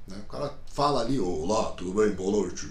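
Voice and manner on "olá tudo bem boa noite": very low, deep, rumbling thunder-style voice. Imitating a guy with a thunderous voice saying hello: very deep thunder voice. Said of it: "Voz de trovão, como a gente fala, voz grave".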